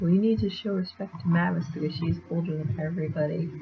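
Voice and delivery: ordinary talk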